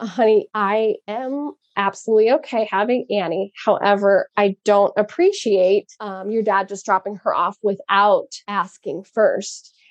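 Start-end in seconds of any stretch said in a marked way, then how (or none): none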